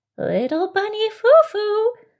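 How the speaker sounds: very high fairy-like voice. Reading a story, a disguised character speaks to Little Bunny Foo Foo in fairy-like voice. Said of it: "she said in a fairy-like voice".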